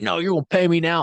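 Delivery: mock loud, high-pitched scream. Speaker retells an argument with a contractor over payment, imitating the contractor screaming. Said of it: "The contractor's screaming at me".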